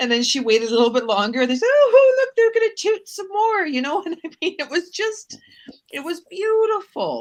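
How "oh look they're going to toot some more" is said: put-on very high, loud, squealing British old-lady voice. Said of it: "fantastic British accent".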